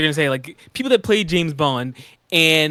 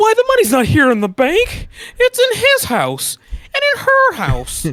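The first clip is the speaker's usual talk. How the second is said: very high, loud dramatic film-style voice, pitch swooping wildly; 5 dB louder than usual. Joining in on doing the It's a Wonderful Life voice: Jimmy Stewart voice. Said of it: "I got a good It's a Wonderful Life voice".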